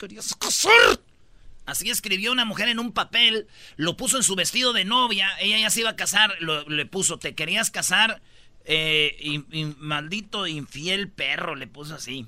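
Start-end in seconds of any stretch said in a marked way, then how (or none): 0.0-1.0 loud, high, furious female voice through gritted teeth. Quoting a note a bride wrote, the speaker acts it mock-angry through gritted teeth. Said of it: "con tono de mujer enojada apretando los dientes".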